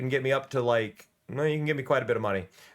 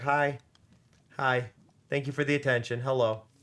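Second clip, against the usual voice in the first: speaking as a cat. Voicing the cat that wants attention after being picked up: voicing the cat. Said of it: "and now he's just like".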